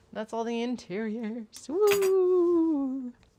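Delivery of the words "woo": long, loud, high, drawn-out ghostly woo moan. On finishing all the interiors, the speaker lets out a ghostly woo. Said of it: "I don't know why I sounded like a ghost".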